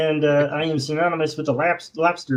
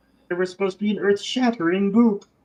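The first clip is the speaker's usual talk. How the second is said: fake cartoonish alien voice; 6 semitones higher than usual. Riffing on a cartoon quote together: cartoon Martian voice. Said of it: "That that's who you're doing".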